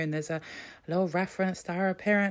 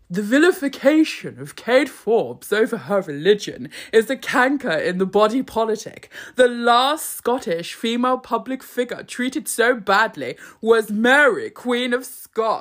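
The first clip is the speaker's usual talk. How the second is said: raised, haunted Victorian doll voice; 3 semitones higher, 6 dB louder than usual. Reading Jacob Rees-Mogg's column aloud in his voice, as a haunted Victorian doll. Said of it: "channel a haunted Victorian doll".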